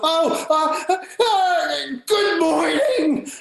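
astonished, delighted stammer, very high, very slow, drawn-out. Retelling her reply to a greeting in the street: imitating a shocked, thrilled reply. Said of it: "she looks up at me in, like, shock".

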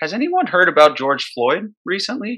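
high, easy, casual tone. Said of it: "Just as casually".

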